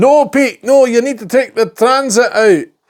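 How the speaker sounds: very high, shrill shouting voice, not very good. Speaker acts out what a former Proton worker would have shouted, shouting Alan Simpson impression. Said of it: "He'd be shouting".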